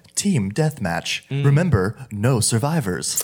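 peppy, upbeat video-game match announcer voice. Describing a video game's announcer, imitating its upbeat game announcer voice. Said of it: "a very like upbeat, like it starts and it goes".

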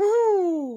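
badly done, high-pitched cartoon whoop. Reviewing Super Mario Kart for the folks listening, do a bad Mario impression. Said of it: "That's the worst Mario impersonation I've ever done".

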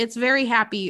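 usual speaking voice

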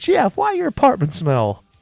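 very high, loud, sing-song, swooping voice. Urging the other person to do the neighbor's voice once more, give a sample imitating Glenda. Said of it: "Come on, just give us one".

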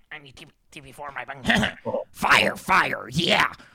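loud, belted-out cartoon-character voice. Asked by a friend to do an impression: Beavis impression. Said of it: "Can you do a Davis impersonation?".

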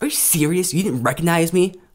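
angry, heated delivery of the words. Speaker acts out a woman confronting him for not recognizing her, mock-angry reading. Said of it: "you're reading that with anger".

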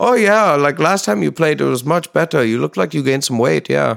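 high, put-on German-accented chatter. Imitating someone in germany commenting on a performer's second visit, german accent. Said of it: "that was a fantastic German accent".

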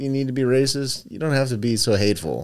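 plain

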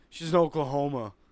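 play-acted very loud, dazed, half-asleep voice. Retelling a dad's reply from his half-sleep state: imitating half-asleep dad. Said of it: "just in his half-sleep state".

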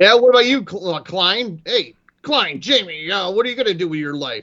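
angry-sounding tone. Retelling how a teacher who was mad questioned a student: imitating Waltman being mad. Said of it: "he was mad at me about something".

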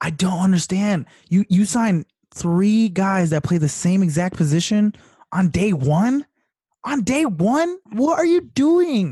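high, incredulous, can't-believe-it tone. Speaking to a conversation partner about a team's signings, incredulous. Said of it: "your incredulous sort of tone of voice".

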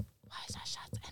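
breathy, barely voiced whisper under the breath. Asking the group a question while friends pour shots, whispering. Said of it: "You don't got to whisper".

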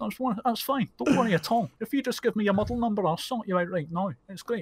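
put-on Scottish accent. Retelling calming a customer on the phone: put-on Scottish accent. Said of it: "if you put on a Scottish accent".

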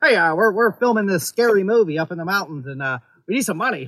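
put-on silly, old-time horse race caller cadence. Imitating a call to local businesses asking for money: Sam Raimi's silly voice. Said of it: "Sam Raimi's, you know, silly voice".

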